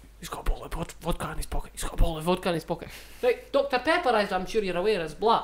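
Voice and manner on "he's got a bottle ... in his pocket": put-on Scottish street ned accent. Retelling what two passers-by said about a bottle: imitating neds. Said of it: "the two neddiest fucks in Scotland walking past, going".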